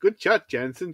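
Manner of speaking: stilted, wooden, stiff delivery, pitched high. Imitating how a man in a film, who can't deliver a line, says it: imitating stilted line delivery. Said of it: "it's so stilted".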